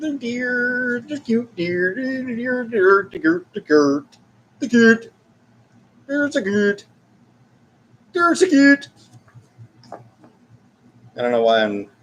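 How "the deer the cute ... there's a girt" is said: put-on mock-Swedish voice, much higher and faster. Speaker catches themselves slipping into a Swedish Chef impression. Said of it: "doing a Swedish Chef impression".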